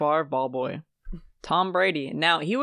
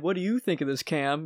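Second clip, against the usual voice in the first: put-on deadpan delivery; 3 dB quieter than usual. Retelling how others suddenly ask for an opinion: imitating a deadpan question.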